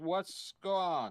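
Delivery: put-on slurred drunk voice. Game master voicing Veronica answering a call from the players: Veronica slurring her words. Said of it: "She's kind of slurring her words".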